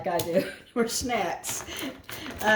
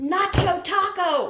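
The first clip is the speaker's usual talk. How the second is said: very high, shrill shout projected to carry far; 10 semitones higher, 4 dB louder than usual. Retelling how a man yelled back across the dark yard at night, retelling a yell. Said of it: "he yells back".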